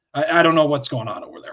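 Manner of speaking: halting stutter over the opening words. Retelling a coach's press conference answer: imitating Tomlin stuttering. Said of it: "it made him stutter back".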